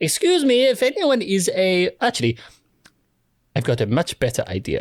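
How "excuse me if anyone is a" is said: booming, drawn-out, high, loud shout. Using magic to call out to anyone nearby: shouting three times louder than normal. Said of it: "a voice that is three times louder than my normal voice".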